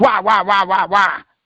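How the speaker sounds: mock whiny baby voice. Speaker mocks someone who keeps asking why: mock whining like a baby. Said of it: "Sound like a goddamn baby whining".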